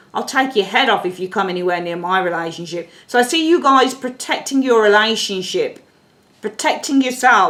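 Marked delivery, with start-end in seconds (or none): none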